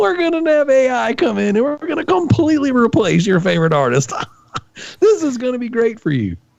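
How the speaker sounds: very high, mock laughter-filled speech. Mocking companies that replace artists with AI, imitating someone laughing while talking.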